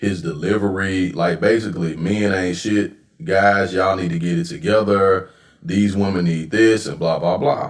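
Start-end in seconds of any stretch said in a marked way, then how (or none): none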